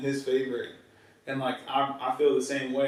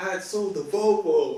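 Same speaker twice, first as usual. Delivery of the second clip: high, drawn-out yelling father voice; 5 semitones higher, 4 dB louder than usual. Retelling how a father yelled at his son in a parking lot: imitating a dad yelling. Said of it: "the dad's yelling at the kids".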